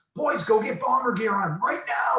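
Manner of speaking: very high, urgent, excited yell. Retelling a father yelling at his kids, retelling a yell at kids. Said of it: "He's yelling at his kids".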